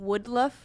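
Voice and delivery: Australian accent, wildlife said as woodluff. Favorite word to say in an australian accent: australian accent on woodluff. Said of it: "my favorite uh, word to say in an Australian accent".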